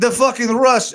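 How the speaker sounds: bad put-on Russian accent. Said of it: "I can't do this accent".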